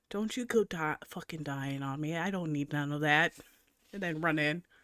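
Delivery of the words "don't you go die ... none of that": hushed, quiet half-whisper. Player's character hugs Jack quickly before running inside: half-whispering. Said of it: "and whisper".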